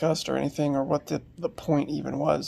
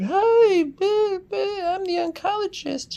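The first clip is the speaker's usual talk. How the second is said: very high, chipper, drawn out; 5 dB louder than usual. Retelling the oncologist's greeting after being woken: imitating a chipper, loud greeting. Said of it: "real, uh, like, chipper".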